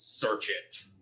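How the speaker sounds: hushed, breathy, whispered growling. Shoving his bag into a man's chest, a player's character gives an order: growling tone. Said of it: "say in a growling sort of tone".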